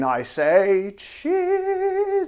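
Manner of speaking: squeaky, small, very high-pitched voice. Tasting gin on the show, the host says cheers in a high voice. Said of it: "I said it in such a high voice".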